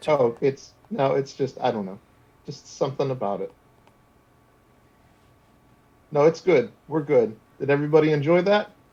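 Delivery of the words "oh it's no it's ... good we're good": fighting back tears. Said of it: "She's trying to fight back tears".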